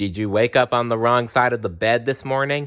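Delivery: ordinary delivery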